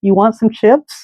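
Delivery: acted, smoothly composed, unruffled, slightly high voice. Speaker retells what a man said right after not responding; imitating a totally composed voice. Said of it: "in a totally, like, composed voice".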